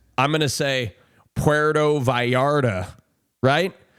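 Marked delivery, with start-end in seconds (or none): 1.3-2.9 English accent with anglicized pronunciation. Showing how the place name sounds in an English accent. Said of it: "if I'm using my English accent".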